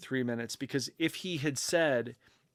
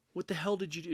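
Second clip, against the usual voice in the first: put-on, furious, indignant outburst, pitched high; 5 semitones higher, 4 dB quieter than usual. Retelling a runner waking up after a too-long race nap: imitating an angry runner. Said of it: "She was pissed".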